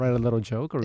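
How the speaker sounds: ordinary talk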